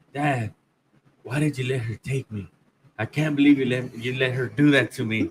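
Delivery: mock crying, tearful, speaking through tears. Retelling the daughter hugging and crying at lunch: imitating a crying daughter. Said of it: "She starts crying".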